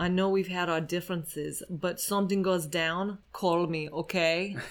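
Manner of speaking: fake Russian accent held throughout. Asked to repeat last week's bit, saying a line in a put-on Russian accent. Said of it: "let's see if I can do a Russian accent".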